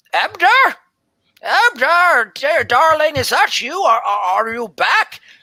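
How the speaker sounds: put-on very high old woman's voice. Narrating a scene to listeners, voicing an old woman calling out, in an old woman voice. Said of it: "an old woman".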